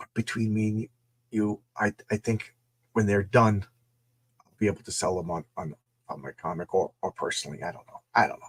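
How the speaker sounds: hushed, secretive half-whisper. Confiding something to the audience between them, half-whispering. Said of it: "I'm whispering like like the powers that be can hear".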